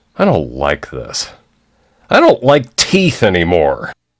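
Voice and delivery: swooping, disapproving, clearly unimpressed voice. Doing a quick impersonation of a dentist after a teeth exam: imitating a frowning dentist. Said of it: "This is my dentist after examining my teeth and now frowning".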